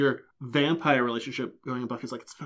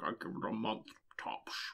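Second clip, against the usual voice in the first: put-on voice, mouth full of fangs, lower, quieter; 3 semitones lower, 14 dB quieter than usual. Retelling a vampire's line after a breakup: mouthful of vampire teeth voice. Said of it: "with his kind of mouthful of vampire teeth".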